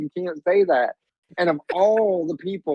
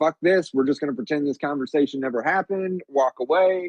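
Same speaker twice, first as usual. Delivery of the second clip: plain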